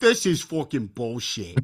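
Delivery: put-on heavy Jersey accent with wide, swooping pitch. Describing New Jersey people forced to pump their own gas: Tony Soprano Jersey accent. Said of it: "turn on the tur Tony Soprano".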